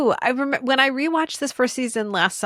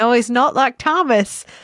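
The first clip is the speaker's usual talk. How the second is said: put-on English accent, louder; 4 dB louder than usual. Quoting Daisy from the episode: English accent as Daisy. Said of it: "I shouldn't attempt the English accent".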